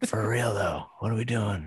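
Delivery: soft half-whisper spoken close into the mic. Continuing the impression, half-whispering into the mic: Joe Biden impression half-whispering. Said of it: "he whispers into the mic".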